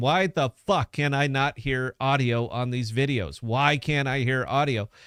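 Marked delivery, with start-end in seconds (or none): none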